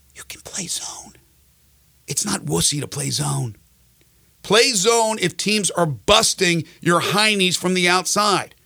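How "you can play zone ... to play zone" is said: barely audible, breathy, hushed, very quiet whisper. Telling teams they can play zone, said as an aside: whispered. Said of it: "I'll whisper it".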